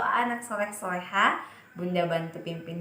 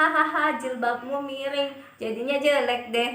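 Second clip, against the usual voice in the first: loud, high, jeering mocking laughter; 7 semitones higher, 5 dB louder than usual. Example of laughing at a friend in front of others: laughing, mocking tone. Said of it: "kita menertawakannya di depan teman-teman yang lain".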